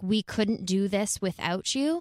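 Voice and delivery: ordinary talk, nothing marked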